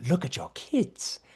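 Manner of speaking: acted old woman voice. Quoting the grandma's line from the movie: imitating the grandma character. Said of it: "when the grandma is just like".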